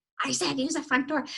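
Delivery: ordinary talk, nothing marked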